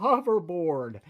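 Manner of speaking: "hoverboard" said slowly, carefully, deliberately drawn out.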